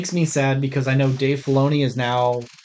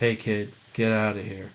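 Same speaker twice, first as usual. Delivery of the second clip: low, soft, flat monotone kept dead level; 4 semitones lower, 6 dB quieter than usual. Mocking a stoic movie character's lines, in a flat monotone Mando impression. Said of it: "He is just monotone all the time".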